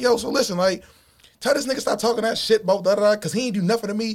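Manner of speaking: mock high, playful, joking yell. Retelling what he yelled during playful joking banter, retelling his own yell. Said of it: "like I'm yelling".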